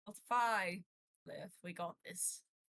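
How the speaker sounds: quiet mutter out of the side of mouth. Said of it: "mutter at the side of his mouth".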